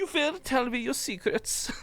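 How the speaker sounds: creepy put-on German officer accent, very high. Showing how they do a German accent, as a creepy general torturing a victim: creepy German general accent. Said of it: "when I think German and I try and do this accent".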